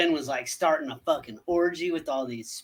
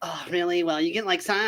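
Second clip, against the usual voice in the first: play-acted, drawn-out, petulant whining voice. Retelling a scene where a character complains: imitating a whiny voice. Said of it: "He gets all whiny".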